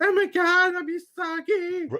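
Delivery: put-on very high, very slow little-girl voice. Showing the listener how the character should not sound, in a twelve-year-old girl voice. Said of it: "sounds like a twelve year old girl".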